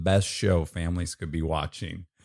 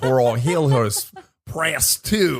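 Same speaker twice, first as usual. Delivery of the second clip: fake Australian accent, higher and louder; 7 semitones higher, 6 dB louder than usual. Imitating a pizza shop phone message: put-on australian accent. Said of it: "that's how the message sounds".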